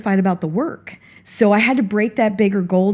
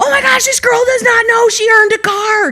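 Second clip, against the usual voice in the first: play-acted very high, loud screaming outburst; 6 dB louder than usual. Retelling what a woman said to her, imitating her screaming. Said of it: "she started screaming".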